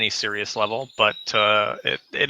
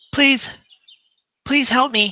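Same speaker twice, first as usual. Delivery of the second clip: put-on very high, tiny pleading child voice; 13 semitones higher than usual. Game master voicing a child who runs up to the players' cart: tiny child voice. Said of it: "you can just hear the tiny voice".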